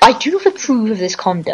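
posh, prim chicken voice tutting with disapproval. Voicing the chickens watching another player: voicing a disapproving chicken. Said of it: "The chickens are watching you".

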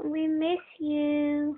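put-on high, slow baby voice.

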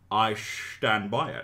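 put-on Scottish accent, movie-star voice. Reading out fan mail that asks for the line as Sean Connery impression. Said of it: "in the voice of your best Sean Connery impression".

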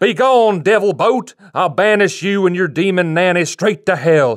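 high, drawn-out preacher scream. Telling of a preacher popping out of the bushes, retelling his scream. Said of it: "popped up out of the bushes and screamed".

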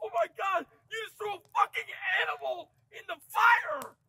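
freaking out. Reacting as a friend throws a dead bat into the fire: freaking out. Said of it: "I don't know why you're freaking out".

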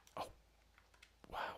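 hushed whisper. Hunting in a game, the player spots an animal, whispering. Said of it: "I don't know why I'm whispering".

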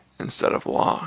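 plain reading voice

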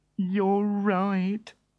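with a sigh. Reading a story aloud, the inventor replies to Woofer, sighing. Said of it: "sighed the inventor".

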